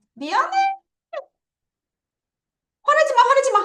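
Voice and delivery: high, loud, mock pleading tone.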